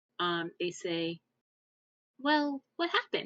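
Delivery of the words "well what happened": put-on small, very high, young-sounding childlike voice. Voicing a character who quietly asks him what happened, in a very young voice. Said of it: "they say in a very young voice".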